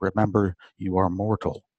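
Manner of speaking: ordinary talk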